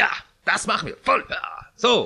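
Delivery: keen, can-do, eager, gushing enthusiasm. Quoting the people agreeing, done with Patrick's put-on eager enthusiasm. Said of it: "mit solcher Begeisterung, wie Patrick aber in richtiger Begeisterung so sagt".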